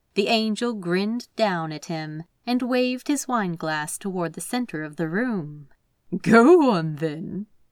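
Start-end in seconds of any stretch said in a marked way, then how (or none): 6.2-7.4 playfully teasing in a raised voice. The angel grins and waves his wine glass toward the room, teasing. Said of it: "he teased".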